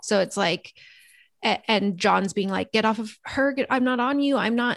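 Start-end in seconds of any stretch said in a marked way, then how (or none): 2.7-4.8 acted-out pleading, begging tone. Retelling a scene, the speaker acts out a man pleading with a screaming woman. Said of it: "He's like pleading with her".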